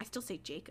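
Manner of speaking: acted muttering. Retelling how a book chapter ends with Mike, imitating him muttering. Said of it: "Mike just muttering".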